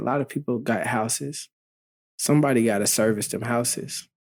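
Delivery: ordinary delivery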